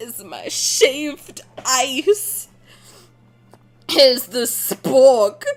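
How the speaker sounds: slow, suggestive, mock sultry delivery. Retelling how someone eating fruit handed over a spork: imitating a seductive voice. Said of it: "Why are you saying spork seductively".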